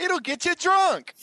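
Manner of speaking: very high, shrill scream. Recalling a comedy sketch ad for a beer: screaming Samuel L. Jackson impression. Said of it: "Him screaming the Samuel L. Jackson beer".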